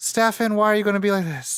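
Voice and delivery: high, breathy, sighed out on an exhale. Imitating a Vampire Diaries character's lines: imitating Nina Dobrev on an exhale. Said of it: "It's always the exhaling".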